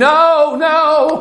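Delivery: loud scream. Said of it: "she's screaming".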